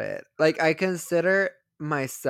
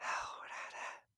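mock whisper, quieter. Retelling a sound heard on the microphone: imitating someone whispering. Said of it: "were you whispering into the microphone?".

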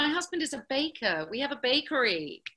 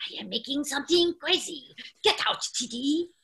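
put-on cartoon kid scientist voice; 2 semitones higher than usual. Recalling a beloved cartoon and acting out his lines, cartoon boy genius voice.

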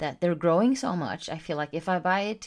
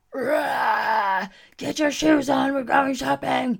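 loud, rough dinosaur scream with a stretched rah; 8 semitones higher, 5 dB louder than usual. After finishing morning client sessions, coming out of the office: dinosaur scream. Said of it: "I screamed like a dinosaur".

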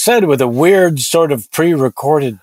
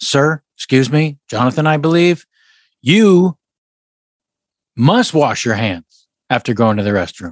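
put-on old-fashioned, courtly, formal manner of speech. Addressing jonathan directly, talking to him like in old timey days: old-timey formal speech. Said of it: "speaking to him like old timey days".

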